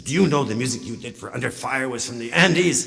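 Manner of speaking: put-on eager Latin American accent. Retelling a young man who approached the speaker at UCLA, in a Latin accent. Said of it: "in a Latin accent".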